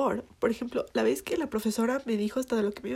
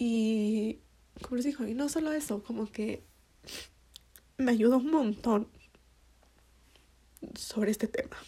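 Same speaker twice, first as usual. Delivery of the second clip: crying, tearful voice. Talking to listeners about a personal process: crying. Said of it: "ay aquí estoy llorando".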